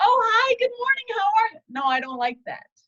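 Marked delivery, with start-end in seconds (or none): 0.0-1.6 very high, put-on friendly, fake-cheerful voice. Gas station worker showing how she fakes being nice to people, fake nice greeting voice. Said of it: "That was my fake".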